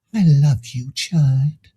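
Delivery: put-on soft hushed whisper. Retelling what she whispered ever so softly: retelling a soft whisper. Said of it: "she whispered ever so softly".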